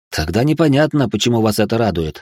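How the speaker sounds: ordinary delivery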